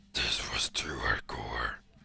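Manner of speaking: very deep, hushed comic voice, comically dropped. A narrator reads a line in a scene about a man's tattoos: comically lowered voice. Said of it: "She lowers her voice comically".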